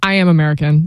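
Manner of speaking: ordinary talk, nothing marked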